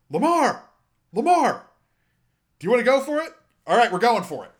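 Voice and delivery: very high-pitched, loud screaming. Describing a broadcast shot of John Harbaugh, imitating John Harbaugh screaming. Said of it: "John Harbaugh just screaming".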